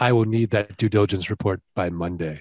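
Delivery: acted, emotionless, flat, even-keeled monotone. Imitating Teria asking for a report, imitating Teria's emotionless Vulcan tone. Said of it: "with her Spock-like Vulcan tone".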